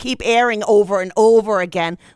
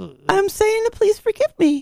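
pretend crying, mock weeping; 10 semitones higher than usual. Begging forgiveness after mixing up the week, fake crying. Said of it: "Are you going to start weeping for the next 15 minutes?".

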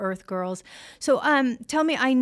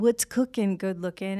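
distinctive voice with a slight rasp; 3 semitones lower than usual. Retelling a hotel phone call from O.J. Simpson: O.J. Simpson impression. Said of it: "I heard this distinctive voice say".

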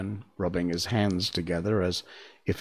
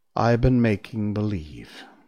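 ordinary delivery

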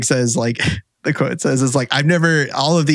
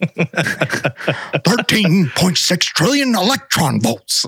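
mad-scientist voice, much higher; 5 semitones higher than usual. Asked to repeat the collision energy figure like Doc Brown: Doc Brown impression. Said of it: "Can you say it like you're Doc Brown?".

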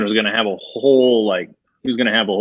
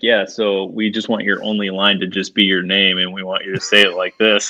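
normal talking voice

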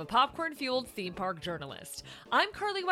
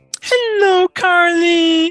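put-on puppet diva voice, higher and louder; 5 semitones higher, 19 dB louder than usual. Greeting the podcast host as the week's guest: Miss Piggy voice. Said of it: "it's Miss Peggy".

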